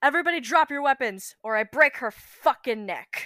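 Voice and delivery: loud, shouted yelling. A player's character holding a captive yells at everybody, yelling a threat at everyone. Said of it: "my fourth one would be like yelling at everybody".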